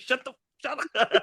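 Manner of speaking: mock choking character voice. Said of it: "starts choking".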